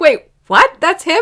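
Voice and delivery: very high-pitched, shrill yell. Talking about a film's voice cast, shouting. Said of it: "Sorry for shouting at you".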